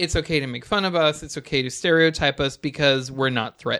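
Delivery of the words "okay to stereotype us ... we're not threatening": ordinary talk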